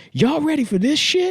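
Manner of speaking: very high, loud, fake hyped news-anchor voice. Retelling a comic's impression of a local news anchor: mock Jim Vance impression. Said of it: "we know he doesn't sound like that at all".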